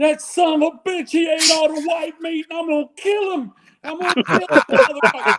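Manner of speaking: mock very high, sobbing, drunken-sounding, furious voice. Retelling what a crying drunk man said at a Thanksgiving domestic: imitating a crying angry drunk. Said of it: "literally crying".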